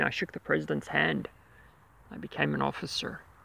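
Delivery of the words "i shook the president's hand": ordinary talk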